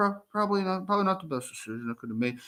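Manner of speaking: soft, indistinct mumbling, words half-formed. Imitating someone admitting a bad decision, in quiet unclear mumbling. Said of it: "like they mumble".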